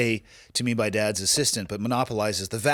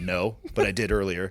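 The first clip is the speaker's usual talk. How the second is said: put-on deadpan delivery. Acting out Dad's answer about entering credit card details, retelling a deadpan reply.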